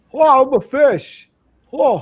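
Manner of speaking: very high, loud, slow, drawn-out drawl. Tell the others you just want to do him, then go into a Jimmy Stewart impression. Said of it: "I just want to do Jimmy Stewart".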